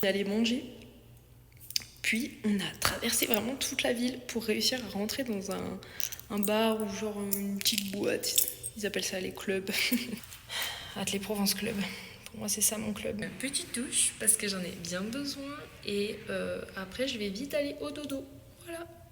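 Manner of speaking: soft, hushed whisper. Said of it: "il faut que je parle plus doucement".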